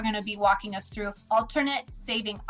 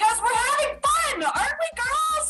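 shrill, very high, rising forced-cheer yelling. Retelling a messy cookie bake with the girls, she acts out her own yelling. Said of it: "And I'm yelling".

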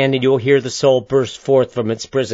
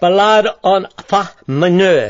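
big, boisterous cry, high and drawn out; 6 semitones higher, 3 dB louder than usual. The pianist, pausing between pieces, cries out; crying out boisterously. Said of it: "The pianist cries out boisterously".

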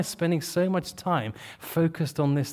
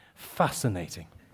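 mocking, dry, sarcastic tone; 10 semitones lower, 5 dB quieter than usual. Saying a word that always comes out sounding sarcastic: sarcastic. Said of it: "every time I say it, it sounds sarcastic".

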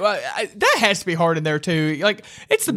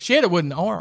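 normal talking voice

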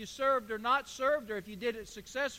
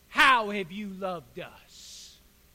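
loud, heavy, mock sarcastic delivery; 4 semitones lower, 6 dB louder than usual. Reading the people's reply to God in verse two: acting out heavy sarcasm. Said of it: "Sarcasm with a capital S".

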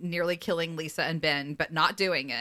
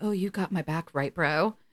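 put-on pointed, needling, passive-aggressive tone. Recapping an episode, retelling a character's line to his brother, mimicking passive-aggressive tone. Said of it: "very passive aggressively is like".

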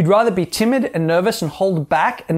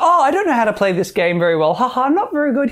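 playful, giggling, high-pitched girly put-on voice; 6 semitones higher than usual. Describing girls playing pool at a bar, speaker acts one out: imitating a giggling girl. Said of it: "And they're laughing, giggling".

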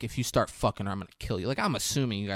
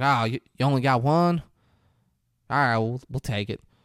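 put-on southern US accent; 3 semitones higher than usual. Retelling a film scene where a guest takes the last room, as Gary Oldman with a southern accent. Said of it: "He has a southern accent for no reason".

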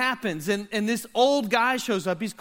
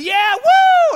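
very loud, shrill, high, whooping scream; 14 semitones higher, 11 dB louder than usual. Telling a story, the speaker acts out a man's cry as he jumps: retelling a scream. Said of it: "He's screaming".

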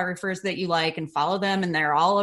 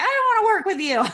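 put-on very high, cranky, crotchety old-lady voice; 14 semitones higher, 4 dB louder than usual. Talking about clients you don't want, playing a crotchety old lady voice. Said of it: "turning into that crotchety old lady who's like".

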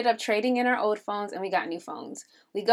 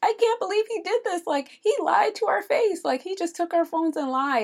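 mock high, tearful, hurt crying disbelief; 9 semitones higher than usual. Retelling going to a friend after being scammed: imitating own past crying. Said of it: "I went to her crying".

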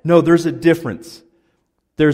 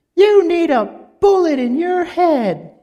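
put-on woman's scream, higher. Retelling a neighbor's wife screaming at her husband: imitating a woman screaming. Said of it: "She screamed that at him".

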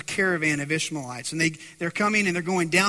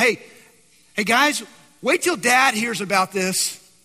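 mock yelling, raised voice; 3 semitones higher, 4 dB louder than usual. Imagining Joseph in the pit, the speaker acts out Joseph yelling. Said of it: "Can you imagine what he's yelling out?".

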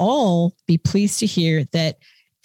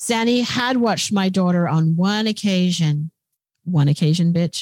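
plain

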